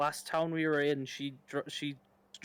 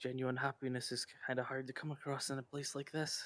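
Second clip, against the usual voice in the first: lowered, quiet voice; 3 semitones lower, 9 dB quieter than usual. Playing the character Pirk in a scene, in a lowered voice. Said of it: "Pirk's kind of going to lower his voice".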